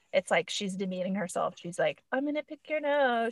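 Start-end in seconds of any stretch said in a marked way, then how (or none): 2.1-3.3 light playful teasing, pitched up. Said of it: "She has to be playful".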